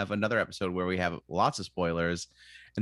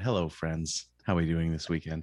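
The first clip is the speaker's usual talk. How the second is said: put-on calm public radio host voice, lower; 3 semitones lower than usual. Greeting a co-host after announcing a Terry Gross bit: Terry Gross voice. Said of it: "I'm gonna Terry Gross it up".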